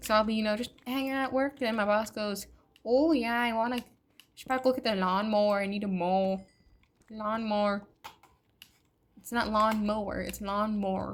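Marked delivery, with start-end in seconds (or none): 2.8-11.2 put-on strong Minnesota accent, laid on thick. Imitating the boss at work talking about the lawnmower, strong Minnesotan accent. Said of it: "it is so strong up here".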